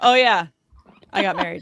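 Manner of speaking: loud, offhand delivery. Joking about a press conference, imitating Aaron Rodgers. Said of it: "the guy that loves to jump on to talk about literally anything is like".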